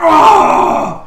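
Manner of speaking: yelled, high, loud pained cry.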